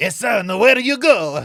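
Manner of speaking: put-on Italian accent. Answering as the father in the same put-on voice: put-on Italian accent. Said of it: "I like that voice".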